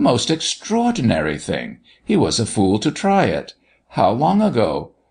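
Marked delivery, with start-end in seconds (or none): none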